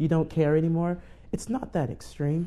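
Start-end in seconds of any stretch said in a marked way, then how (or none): none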